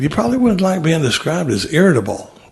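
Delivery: ordinary delivery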